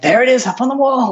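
mock thrilled gush, pitched very high and fast. Retelling a podcaster finally seeing a painting: imitating an excited voice. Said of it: "you can sense the excitement in his voice".

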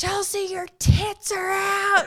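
very high, stretched-out, drawn-out yell. Retelling a water park mishap: imitating James yelling. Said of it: "was yelling".

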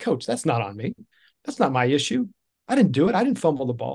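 put-on brash, self-assured, cocky teenage tone. Retelling a reply to the yelling coach: imitating a cocky teenager. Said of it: "I was a cocky, like, fourteen-year-old".

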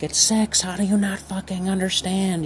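put-on very high, freaked-out, furious screaming. Retelling a frustrated parent's outburst over a math problem: imitating someone screaming.

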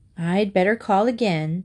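ordinary delivery

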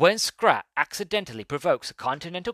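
movie trailer narrator voice. Speaker presenting a film synopsis, doing a cool voiceover guy voice. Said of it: "do my cool voiceover guy voice".

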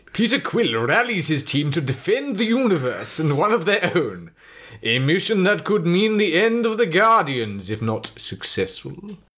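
very high, fruity, grand theatre actor voice. Reading a film synopsis aloud, in a fruity theatre actor voice. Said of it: "Did this use my fruity theatre actor voice?".

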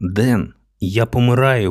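whispered. Bleeding in the park, a girl calls out to the young man: whispered. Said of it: "прошепотіла Катя зкривавленими устами".

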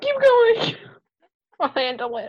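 very high voice, cracking up, laughing through words. Crying with laughter, telling the other person to keep going: laughing hard. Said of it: "I'm laughing so hard".

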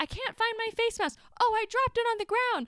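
shrill, very high-pitched, loud yelling voice. Retelling a woman on a flight talking loudly: imitating a woman yelling. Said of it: "awakened by this yelling".

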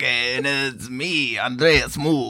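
put-on Spanish accent. Introducing himself in a group bit where everyone talks like they're from Spain, Spanish accent. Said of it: "Let's all talk like we're from Spain".

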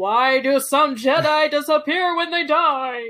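very loud, booming, high announcer bellow. Reading someone's all-caps Facebook question aloud, in a put-on all-caps voice. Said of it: "That was my caps voice".

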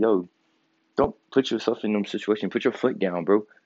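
ordinary delivery

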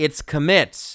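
put-on very loud, shrill, forceful, angry child's yell. Retelling how a kindergartner corrected the speaker's prayer: retelling a child's angry yell. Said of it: "this voice yells".

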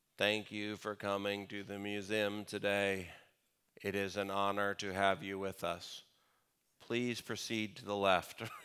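very bored, low, flat, slow monotone drone. Describing the worst kind of museum guide, doing a mock boring monotone guide. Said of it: "They're monotone".

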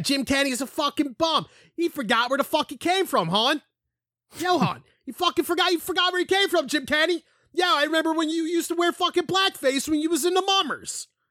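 put-on very high, loud ranting South Philly accent yell. The speaker imitates somebody from south philly yelling at jim kenny: put-on south philly accent, yelling. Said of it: "That's somebody from South Philly".

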